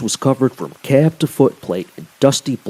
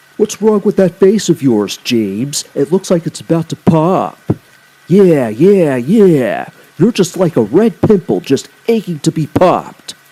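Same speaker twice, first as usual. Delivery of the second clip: high, mocking, jeering, teasing voice; 4 semitones higher, 4 dB louder than usual. Narrator voices freight cars teasing an irritated engine, teasing freight cars. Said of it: "The freight cars could see [name] was getting visibly irritated, so they decided to tease him. / The freight cars could see [name] was getting visibly irritated, so they decided to tease him. / so the".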